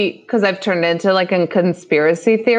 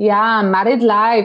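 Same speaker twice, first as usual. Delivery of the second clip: bad fake Spanish accent, slower. Retelling what a woman said in videos people found, bad Spanish accent impression. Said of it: "imitating a bad Spanish accent".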